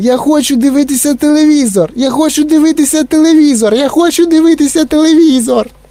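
squeaking voice, tiny and very high-pitched. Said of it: "пищав він".

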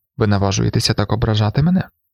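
ordinary delivery

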